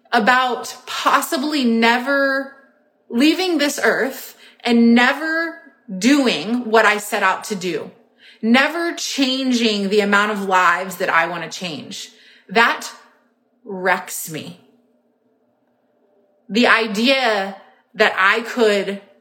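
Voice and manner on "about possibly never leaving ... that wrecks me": voice welling up with feeling, emotional and moved. Speaking about fear of never reaching her goals, getting emotional. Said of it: "it makes me emotional".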